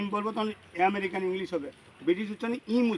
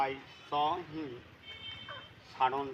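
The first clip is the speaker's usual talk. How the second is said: slow, deliberate, with a pause before suddenly; 6 semitones lower, 8 dB quieter than usual. Showing a learner how to say the line: pause before suddenly. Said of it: "আমি উচ্চারণ করি, তোমার শোনো".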